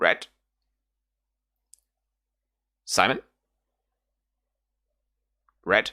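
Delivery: bird-like raven cry calling out. Game narrator voicing a raven calling out the player's name, shrill little raven voice. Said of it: "and calls at you".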